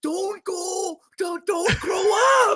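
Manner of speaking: very high voice, words dragged slow, pleading. Comparing own celebration to a movie scene: Adam Sandler impression. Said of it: "like Adam Sandler with the kid".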